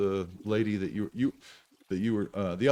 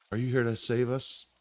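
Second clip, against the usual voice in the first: feeble, very weak, faint, barely-there voice; 2 semitones higher than usual. Voicing a woman who looks up as you push in closer: really weak voice. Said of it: "sounds really weak".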